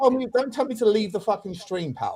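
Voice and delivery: agitated, heated, angry outburst with swearing. Telling off another speaker who told him to leave: heated anger. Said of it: "calm down".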